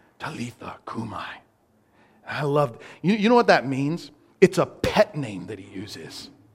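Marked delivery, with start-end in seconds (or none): 0.2-1.3 whispered, much quieter. Retelling the pet name he whispered as he went in there: whispered. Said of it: "he whispers".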